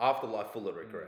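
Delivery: normal talking voice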